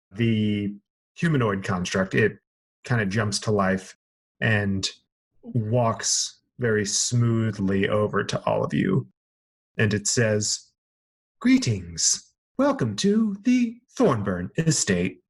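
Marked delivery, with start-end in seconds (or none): 11.4-15.1 prim, mechanical robot butler voice, high and swooping. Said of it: "is it C three P O?".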